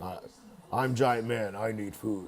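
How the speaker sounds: words dragged out slowly in a brutish voice. Suggesting how to ask for food at church: Hulk voice. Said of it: "say it like the, the Hulk".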